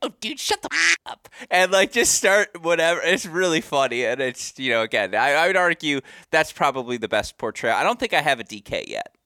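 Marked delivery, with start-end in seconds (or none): 0.0-1.3 very high, pushed-up, squeaky put-on voice. Retelling how a college roommate imitates the speaker: imitating a higher-pitched voice. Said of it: "go into a higher pitch and be like".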